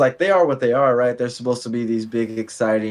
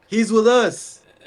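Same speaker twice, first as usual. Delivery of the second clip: mock shouting, higher pitch; 11 semitones higher, 4 dB louder than usual. Acting out trash talk at a shooter on the court: pretend yelling trash talk. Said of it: "if you catch the ball and I yelled".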